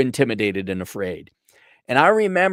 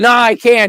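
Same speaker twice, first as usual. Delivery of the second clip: put-on panicked yelp, very high, shrill and loud; 10 semitones higher, 8 dB louder than usual. Retelling his refusal when the teacher suggested a week: imitating his own panic. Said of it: "I was panic".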